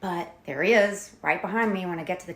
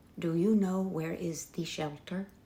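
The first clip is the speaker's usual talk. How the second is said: hushed half-whisper, full of shame; 4 dB quieter than usual. Retelling what the man in the green suit half-whispered to the speaker: retelling an ashamed half-whisper. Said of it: "he whispers in a voice tinged with shame".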